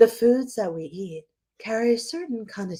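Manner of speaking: public radio host style voice. On a podcast, opening a topic in an NPR voice. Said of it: "I was doing my N P R voice".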